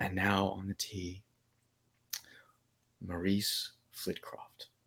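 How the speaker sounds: very quiet, hushed golf announcer commentary voice. Telling the story of golfer maurice flitcroft, golf announcer voice. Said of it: "I imagine, like, the golf announcer".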